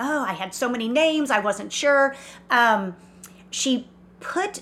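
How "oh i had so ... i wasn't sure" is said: ordinary delivery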